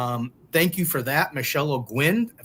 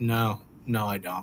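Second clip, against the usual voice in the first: flat, low, drawn-out monotone with no inflection; 5 semitones lower, 4 dB quieter than usual. Retelling how he shot his answer right out: imitating a flat monotone. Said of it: "like he shot it right out, monotone, no expression, no nothing".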